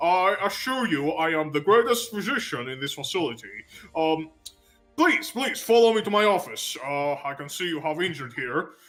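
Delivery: muffled put-on character voice. Playing a bandaged doctor greeting his new patients, muffled Doctor Y voice. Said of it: "he speaks very muffled, you know, through the bandages".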